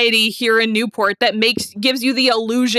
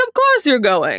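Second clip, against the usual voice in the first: put-on Mid-Atlantic accent; 3 semitones lower than usual. Retelling a mother's line from a show scene: imitating a Mid-Atlantic accent. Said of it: "I just love the Mid-Atlantic".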